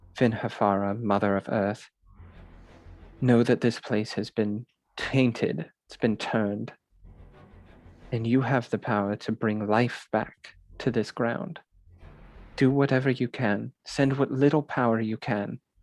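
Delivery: very quiet, hushed murmur under the breath. Voicing a character praying over a defiled chapel: very quiet prayer under breath. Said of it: "so very quietly under his breath, he says".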